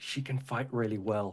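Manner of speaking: loud, hushed stage whisper meant to carry. Voicing a character introducing a fighter to a child: loud whisper. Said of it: "but in a loud whisper says".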